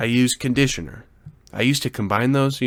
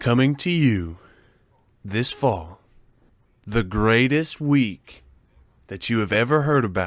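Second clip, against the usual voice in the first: slow, grand, epic movie-trailer announcer narration. Starting a round about their week with Camper: epic movie trailer voice. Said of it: "what we did in an epic trailer voice".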